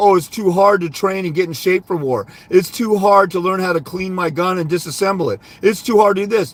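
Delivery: ordinary talk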